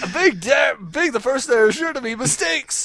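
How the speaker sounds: plain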